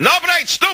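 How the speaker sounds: high, furious screaming in Russian.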